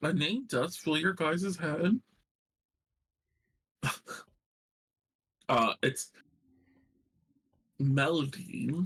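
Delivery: talking while chewing, mouth full. Giving a name to the group while eating a candy, mouth full. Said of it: "I decided to eat a candy at the wrong moment".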